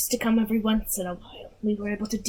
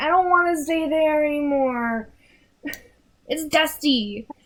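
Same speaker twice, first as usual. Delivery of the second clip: put-on high, slow little boy voice; 5 semitones higher, 4 dB louder than usual. Speaker recounting what the smaller boy said in the story, small boy voice. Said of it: "smaller boy's like".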